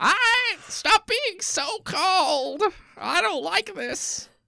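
put-on old woman yelling, very high, slow and drawn out. Joking that the other speaker should scold the cold weather: put-on old lady yelling at clouds. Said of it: "old lady goes and go".

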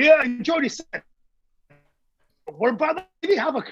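put-on real Geordie accent. Retelling what a man from Newcastle said at breakfast, Geordie accent. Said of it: "And it's real kind of Geordie accent".

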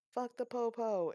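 acted-out, high-pitched hollering. Telling a story, speaker retells a woman yelling at police cars: retelling a yell. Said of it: "starts yelling like".

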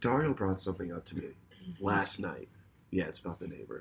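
hushed, dropped-down, very low voice. Speaker raising a topic about the neighbor on air, getting quiet. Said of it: "That's why I'm getting all quiet".

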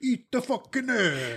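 put-on New York accent. Introducing a New York Guido, then speaking in a New York Guido accent. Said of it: "Here's a New York Guido".

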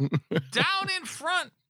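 very high, shrill yell. Recounting standing up at a match, retelling the speaker's own yell. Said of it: "I am yelling".

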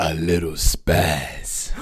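very low, creepy, unsettling tone. Showing the other speaker the creepy way to say a phrase, creepy voice. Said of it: "Can you say it like the creepy thing that I hate?".

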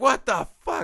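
play-acted, very high, stunned, shocked outburst. Recounting their own reaction to a shocking scene: retelling a shocked outburst. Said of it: "that rocked me".

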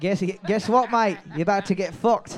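bad, clumsy, put-on fake Australian accent. Playing an australian animal taking over a home: bad australian accent. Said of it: "with my bad accent".

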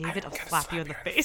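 low, hushed stage whisper. Retelling a scene where Alexis threatens David: imitating Alexis whisper-threatening. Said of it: "whisper says to him".

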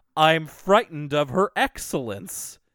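robotic, mechanical delivery. Recounting a favourite line from Arthur, doing Buster's robotic delivery. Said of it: "in this very robotic delivery just goes".

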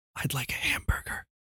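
soft, hushed, barely voiced whisper. Telling a joke where the man in a library whispers his order: whispering. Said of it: "The man apologizes and whispers".

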